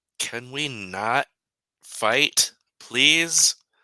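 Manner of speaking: very loud, pleading yell. Speaking as their character in the scene, the speaker yells out: yelling. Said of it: "I yell out".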